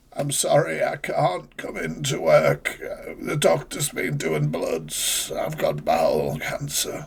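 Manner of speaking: soft, put-on sick-sounding voice. Mocking how people ring in sick to work, in a fake sick voice. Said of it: "just literally putting on the voice, you know, like when you ring in sick".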